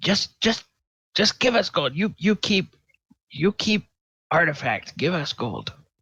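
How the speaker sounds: wary, distrustful gnoll voice. Narrating a game, the speaker voices gnolls addressing the players: distrustful gnoll voice. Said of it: "They look at you kind of distrustfully, say".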